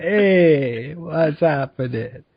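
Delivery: the word "hey" long and drawn out. Suggesting a voice for the Imperial soldiers: The Fonz voice. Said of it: "The Fonz, like".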